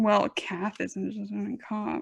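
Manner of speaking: muttering under breath. Muttering an aside to the group, who then ask to hear it again; muttering under breath. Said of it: "Stop mumbling".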